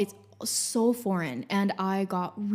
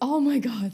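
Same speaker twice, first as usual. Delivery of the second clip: long exhaled sigh of relief; 4 semitones higher, 4 dB louder than usual. Retelling the moment of learning the train wasn't missed: reenacting a sigh of relief. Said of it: "sigh of relief".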